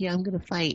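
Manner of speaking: tiny, timid, diminutive voice, high and soft. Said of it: "putting this, like, diminutive voice".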